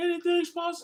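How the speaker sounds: put-on tearful, screaming sob. Retelling an athlete's sideline interview after winning the title: imitating a crying scream. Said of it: "he screamed into the top of his lungs like he was crying".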